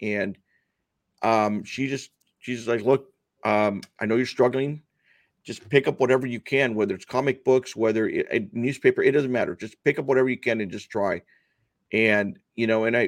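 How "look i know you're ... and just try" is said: ordinary talk, nothing marked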